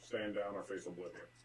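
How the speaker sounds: gravest, deadly serious commanding tone. As a twenty-five-foot-tall figure addressing a group, in a very serious tone. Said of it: "The most serious tone that I could possibly muster".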